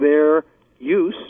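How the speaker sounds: stress placed on the word "use".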